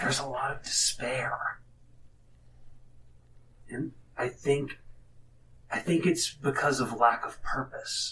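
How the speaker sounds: hushed, confiding whisper with a worried tone. Voicing a character leaning in to share a worry: whispering in character. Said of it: "he's gonna kinda lean in and he whispers".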